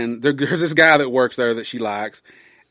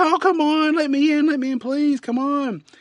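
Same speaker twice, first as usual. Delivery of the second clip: put-on upset crying, much higher and slower. Retelling a story, acting out the locked-out girl while imitating her crying and upset. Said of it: "she's crying and she's upset".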